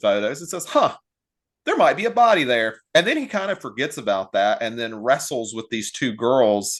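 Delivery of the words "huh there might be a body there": tongue-in-cheek, sarcastic, pitched-up delivery. Retelling what a film character says, imitating someone sarcastically. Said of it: "you're saying all this sarcastically".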